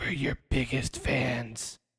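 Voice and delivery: soft, breathy, hushed, creepy near-whisper. Recapping the scene, speaker quotes Cordy answering Jimmy King: creepy Cordy voice. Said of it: "It's such a creepy voice".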